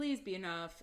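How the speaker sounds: ordinary delivery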